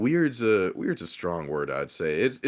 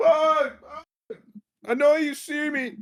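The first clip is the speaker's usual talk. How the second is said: put-on very high, shrill drunk hollering; 4 dB louder than usual. Retelling how a drunk former drum major kept calling out: imitating a drunk guy screaming. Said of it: "he just keeps screaming like".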